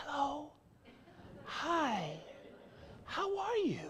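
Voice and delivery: hushed, soft, very slow whisper. Speaker demonstrates talking softly to people about an unwelcome message, in a soft whisper. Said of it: "you could only whisper to people".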